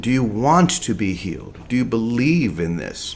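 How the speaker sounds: ordinary delivery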